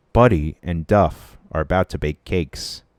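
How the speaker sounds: mock bored announcer, deadpan, zero enthusiasm. Mocking a boring baking-show commentator, with a mock-deadpan commentator reading. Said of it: "reading this so deadpan".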